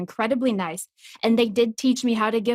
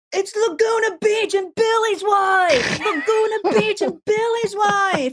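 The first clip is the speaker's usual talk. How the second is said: very high, shrill, acted drunk yell, "wife" stretched; 12 semitones higher, 4 dB louder than usual. Retelling drunk frat bros at a bar: imitating drunk screaming. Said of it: "kept screaming at us".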